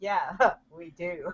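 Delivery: soft speech while laughing.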